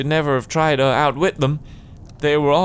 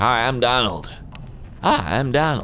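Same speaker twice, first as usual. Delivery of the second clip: put-on slow speech in American accent; 3 semitones lower than usual. Voicing a game character, Donald with an American accent. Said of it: "That's Donald's voice".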